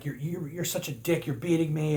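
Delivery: sputtering sore-loser yell, stumbling start. Retelling a losing player yelling at his opponent: imitating someone yelling. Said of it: "He's yelling at him, like".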